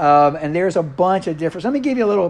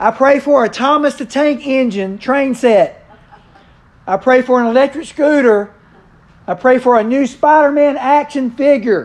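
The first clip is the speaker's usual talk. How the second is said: very loud, high-pitched shouting at the top of the lungs; 8 semitones higher, 5 dB louder than usual. Telling a joke about a boy praying at bedtime: acting out praying at the top of his voice. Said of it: "began praying at the top of his voice".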